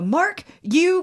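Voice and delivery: exasperated, high, frustrated outburst. Speaker retelling how he snapped at Mark, retelling a frustrated outburst. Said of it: "and I'm like super frustrated".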